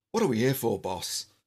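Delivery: attempted put-on Irish accent. Reading a story aloud, a wiry red-haired man asks the boss, attempted Irish accent. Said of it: "I'm going to try and do an Irish accent now".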